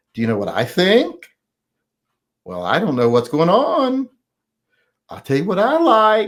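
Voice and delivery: uptalk, each line lilting up at the end. Mocking people who go up at the end of every sentence: imitating uptalk. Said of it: "they go up at the end of every sentence".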